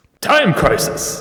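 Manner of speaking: arcade video-game announcer voice. Asked by the other speaker for their best arcademan voice, arcade announcer voice. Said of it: "give me your best arcademan Time Crisis".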